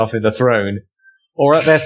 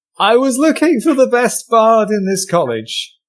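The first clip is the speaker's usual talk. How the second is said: put-on, forced posh voice, very high-pitched; 10 semitones higher than usual. A player speaks in character during a tabletop game, forced fancy voice. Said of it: "Forced fancy voice".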